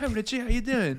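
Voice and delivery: put-on soft, half-strength British accent. Practising an impression of a 70-year-old british man greeting richie, moderate british accent. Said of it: "turn the knob up to 5 on his British".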